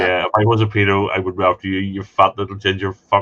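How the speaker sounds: usual speaking voice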